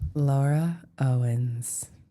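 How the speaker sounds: dark, portentous, ominous, foreboding delivery. Saying a name again when asked to: mock ominous. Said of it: "You have to say it with ominous".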